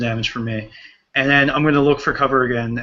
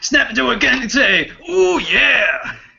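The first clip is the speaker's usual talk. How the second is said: rough, raspy growl with the word yeah drawn out; 11 semitones higher than usual. Player retelling what another player does in the game, in Macho Man voice. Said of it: "he goes into his Macho Man voice".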